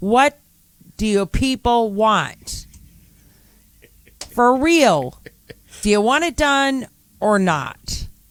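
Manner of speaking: agitated, fed-up voice. Ranting to another speaker about people complaining over road work: upset. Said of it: "Why are you getting upset with me about this?".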